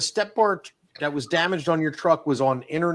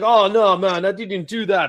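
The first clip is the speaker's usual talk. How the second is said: loud, high, drawn-out put-on Jamaican accent; 5 semitones higher, 6 dB louder than usual. Retelling a conversation, the speaker quotes him imitating a jamaican accent. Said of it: "He's Jamaican".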